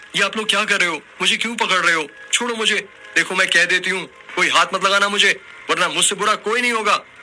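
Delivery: very high, rushed, flustered, startled outcry. A woman wakes as village men grab her, flustered and startled. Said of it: "In the shadows of a forgotten ghat lies a cursed banyan tree… and tied to it, the spirit of a beautiful Aghori woman draped in a red saree, once burned alive for practicing forbidden rituals. / उस औरत".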